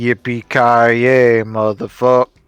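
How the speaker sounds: loud, flat, dead level deadpan monotone. A host announces it, then delivers the line in a monotone voice. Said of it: "Monotone voice".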